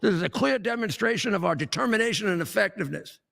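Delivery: plain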